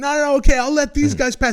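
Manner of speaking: acted-out shout. Retelling answering a man on a scooter, retelling shouting back. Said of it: "And I'm shouting back".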